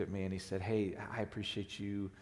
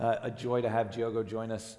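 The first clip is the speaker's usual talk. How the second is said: ordinary delivery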